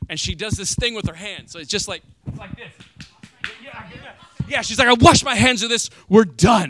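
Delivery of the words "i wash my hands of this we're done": mock outburst, very loud, mad and emotional. Imitating the wife ending an argument: imitating an angry, emotional wife. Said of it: "she's mad and she's emotional".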